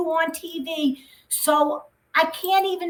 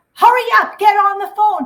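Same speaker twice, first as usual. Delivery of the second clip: mock scream, higher and louder; 4 semitones higher, 7 dB louder than usual. Retelling a family phone call, the speaker imitates the mother screaming. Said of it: "like screams".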